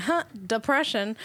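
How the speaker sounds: ordinary talk, nothing marked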